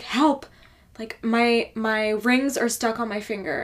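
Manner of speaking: loud, frantic, freaking-out woman's voice. Retelling a lady who ran in at work: imitating a frantic woman. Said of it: "like, frantic".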